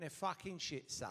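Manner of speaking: hushed, breathy, whispered voice. Retelling what the Portsmouth manager said about his players: imitating Harry. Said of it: "That's exactly how he went".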